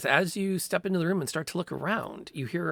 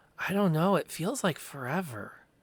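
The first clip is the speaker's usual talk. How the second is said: put-on young boy character voice. Narrating a story, voicing a boy answering how long they've been hiding: boy's voice. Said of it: "The boy's voice answers".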